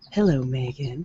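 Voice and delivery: Southern belle accent and voice. An audiobook narrator shows how different character voices are made: Southern belle accent. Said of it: "you might have a Southern belle".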